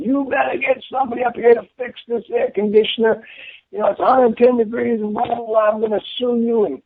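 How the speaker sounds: very high, screaming ranting voice. Retelling a resident's phone call about a broken air conditioner, imitating a resident screaming. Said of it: "screaming at me".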